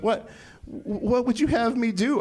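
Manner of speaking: high, whimpering, pleading voice.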